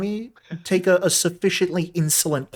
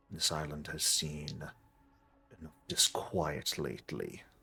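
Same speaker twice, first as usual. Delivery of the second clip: aged voice, much lower and quieter; 7 semitones lower, 14 dB quieter than usual. Narrating a game scene, the speaker voices a hoofed creature: deeper, aged voice. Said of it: "You hear a somewhat deeper voice, but one filled with age".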